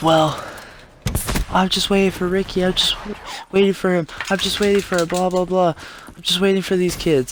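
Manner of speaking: put-on high-pitched kid voice. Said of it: "this high-pitched kid".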